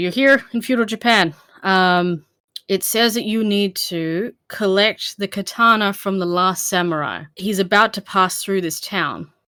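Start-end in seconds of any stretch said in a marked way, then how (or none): none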